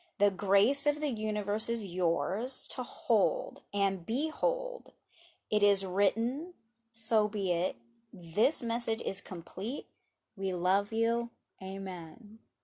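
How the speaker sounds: slow, unhurried, gentle, easy flow. Reading a short message aloud to listeners, in a slow, gentle reading. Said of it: "I'm going to like slow things way down as I read this message".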